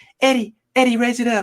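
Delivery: very high-pitched voice. Retelling a man calling to eddie to raise it up, imitating his high-pitched voice. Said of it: "in his high pitched voice".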